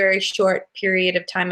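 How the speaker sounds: ordinary delivery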